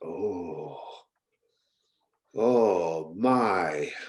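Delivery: awestruck tone. Voicing Myrna watching the branches form a pathway: awestruck. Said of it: "in awe of that".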